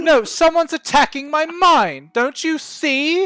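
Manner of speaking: very high, shrill, indignant huffing, flustered and furious. Voicing a lady swatting at the air: furious flustered lady. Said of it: "she starts to get all huff and puff".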